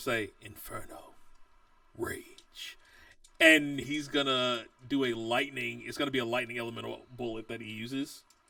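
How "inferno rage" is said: barely-there, very quiet, breathy whisper. Game master voicing a character's attack words, whispering. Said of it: "You will hear him just in a whisper".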